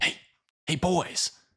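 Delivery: soft, high, secretive little whisper. A game master voices a little whisper from a locker to the boys: whispering. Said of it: "you hear a little whisper that says".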